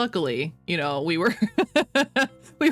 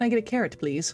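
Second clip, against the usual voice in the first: put-on overly polite voice; 4 semitones higher than usual. Retelling own order at the restaurant counter: imitating own overly polite request. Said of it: "I was being too polite about it".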